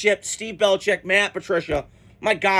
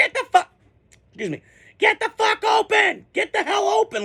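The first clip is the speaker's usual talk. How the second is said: put-on angry yell, higher-pitched; 12 semitones higher than usual. Retelling a quarterback yelling at receivers: imitating Brady screaming. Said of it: "He's screaming at the receivers".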